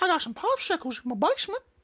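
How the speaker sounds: creepy high-pitched voice. Riffing while playing a game, in a creepy Herbert voice. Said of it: "would just do Herbert voices all day".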